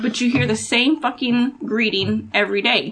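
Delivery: normal talking voice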